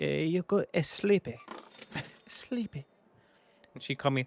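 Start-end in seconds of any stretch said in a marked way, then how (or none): 0.0-2.9 put-on Peruvian Spanish accent. Retelling how a grandma told someone to sleep: imitating Peruvian grandma's accent. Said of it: "she's Spanish... a hundred percent Peruvian... she'd be like".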